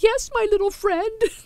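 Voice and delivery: goofy, whimpering, very high voice. Retelling her reply when he called her Miss Sue, in a goofy whimpering voice. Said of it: "I replied in a goofy, whimpering voice".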